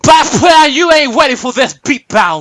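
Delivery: sudden heated, worked-up, angry outburst. The speaker describes how someone talks when he gets mad, imitating him getting mad. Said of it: "when he gets mad, he goes".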